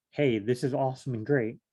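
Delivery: ordinary talk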